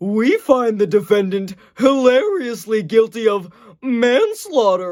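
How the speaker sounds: big, loud delivery with swooping pitch. Speaker doing a series of impressions: Goofy as a jury foreman. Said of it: "Goofy as a jury foreman".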